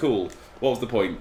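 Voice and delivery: ordinary talk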